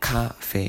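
cafe with stress on first syllable ca. Showing how most Korean people say cafe: stressed on first syllable. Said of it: "most of the Korean people put the accent on ca... so it sounds like cafe, like this".

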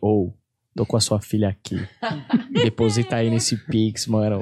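deep, very low voice. Retelling a voice message Eudes sends when asking to borrow money: imitating Eudes' voice message. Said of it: "Ele me manda um áudio assim".

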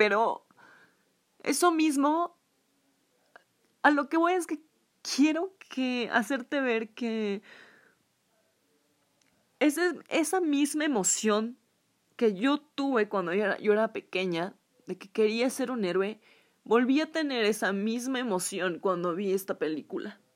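crying while speaking. Right after apologizing for crying, still tearful. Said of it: "qué pena que estoy llorando".

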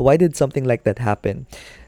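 ordinary talk

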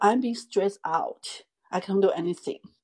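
heated, fast, angry outburst, words tumbling out. Retelling a reply to a man's questioning, retelling an angry outburst. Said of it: "我当时我也怒了".

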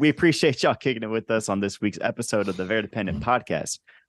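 ordinary delivery

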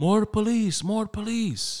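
put-on old man voice, loud, very high-pitched and slow. Retelling what a neighbor shouted out his window: imitating an old Dominican man. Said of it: "I literally saw an old Dominican dude go".

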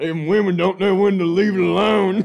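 put-on very high, very loud old grandpa voice. Mocking a man who sounds like his grandpa, the speaker imitates him in an old grandpa voice. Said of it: "he sounds like my grandpa. He's like".

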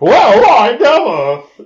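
put-on stuffy dowager voice, very high, loud, shrill, swooping. Describing a character they were introduced to, stuffy Three Stooges dowager voice. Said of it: "the stuffy dowager from a Three Stooges short".

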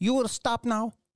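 high, thin, powerless voice with no punch. Mocking how a movie fighter sounds when he threatens someone: imitating Jet Li's voice, lacking power. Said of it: "somebody dub this man's voice".

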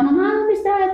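put-on very high, frightened child yelling out. Retelling being left alone as a child and calling for mom: retelling own childhood yell. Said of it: "Y yo le gritaba".

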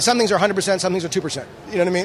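rapid-fire speech. Answering an interviewer's question, talking fast. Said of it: "does he talk fast".

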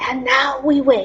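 hushed whispering. Undoing her restraints and putting her in the chair, whispering.

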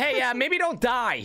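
snarky, sarcastic AI voice, pitched way up. Voicing a game AI teammate giving advice: sarcastic AI voice. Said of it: "a sarcastic one".

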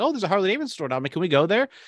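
teasing, half-kidding tone. Recounting asking him to go to a store, retelling in a joking tone. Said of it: "I said in my little joking fashion".

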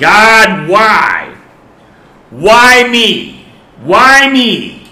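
very shrill, very slow, drawn-out scream. Telling a joke about a man's bad day, imitating him screaming up to heaven. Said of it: "he looks up to heaven and he screams out".

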